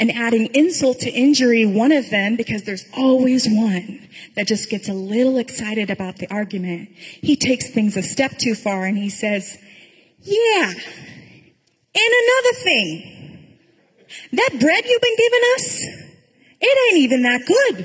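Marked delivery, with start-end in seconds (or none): 10.2-17.9 put-on Brooklyn accent, way up high. Retelling a story, the speaker voices the one who gets excited in the argument, brooklyn accent. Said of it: "in my head he had a Brooklyn accent, but I did my best".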